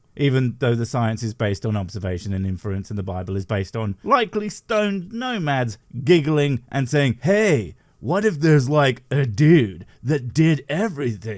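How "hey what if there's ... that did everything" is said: put-on Middle Eastern surfer dude accent. Mocking stoned nomads with an idea: Middle Eastern surfer dude accent. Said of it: "in the Middle Eastern version of a surfer dude accent".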